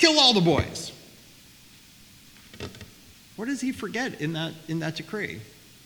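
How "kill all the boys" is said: high, loud, frustrated voice. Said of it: "He's so frustrated ... he's like".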